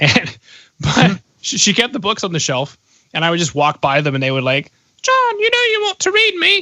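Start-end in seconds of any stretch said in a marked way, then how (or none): 5.0-6.6 very high-pitched put-on British accent. Speaker voices books on the shelf calling out to him, british accent. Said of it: "I don't know why they have a British accent".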